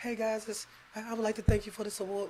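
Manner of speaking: halting, stumbling celebrity-style public speaking voice. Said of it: "we know how [name] talks in public".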